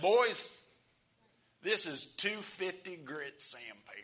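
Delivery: loud, slow southern Kentucky drawl. Retelling a shop teacher's words: imitating a Kentucky teacher's accent. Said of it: "he was from Kentucky".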